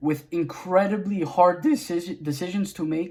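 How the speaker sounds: voice breaks mid-word on "decisions". Praising the gigs in a game expansion, voice cracking. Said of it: "Sorry, voice crack".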